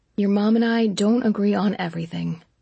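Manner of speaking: ordinary talk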